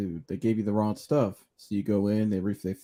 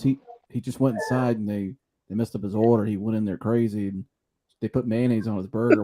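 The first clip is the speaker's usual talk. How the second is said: normal talking voice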